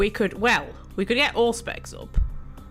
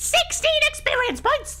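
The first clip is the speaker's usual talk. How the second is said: much higher, louder, very high-pitched voice; 4 dB louder than usual. Checking a character sheet during a game, shocked, voice going really high. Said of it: "My voice went really high".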